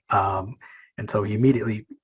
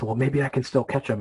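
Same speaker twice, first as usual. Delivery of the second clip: ordinary talk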